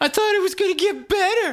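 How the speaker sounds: very high, whiny, complaining sing-song voice. Imitating whiny leftists, the speaker slips into a mock-whiny complaining voice. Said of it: "I'm doing the voice of the whiny leftists".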